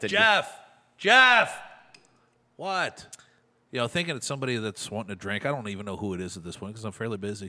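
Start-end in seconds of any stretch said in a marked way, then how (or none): 0.1-1.6 acted very high-pitched yell. Retelling how a man at a table kept yelling for him, imitating someone yelling. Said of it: "he just yelled".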